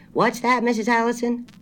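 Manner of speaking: loud, high-pitched calling out. Narrating a story, Mr. Babcock speaks to Mrs. Allison on the phone: said loudly. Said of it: "Mr. Babcock said loudly".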